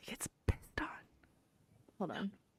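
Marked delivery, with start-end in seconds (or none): 0.0-0.9 unvoiced, very soft whisper. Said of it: "I'll whisper it".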